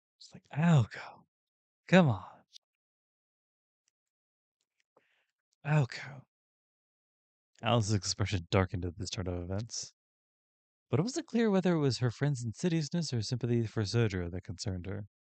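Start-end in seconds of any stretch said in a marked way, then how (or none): 0.6-6.2 mock-withering, disappointed, much higher, much slower. Replaying how she said a name in the recording, mimicking a withering tone. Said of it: "It just sounds so withering".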